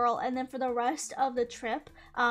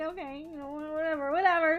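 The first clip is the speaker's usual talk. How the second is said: close to crying, voice barely holding together; 4 semitones higher than usual. Retelling own reply after being left behind: imitating own near-tearful voice. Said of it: "I was on the verge of tears at that point".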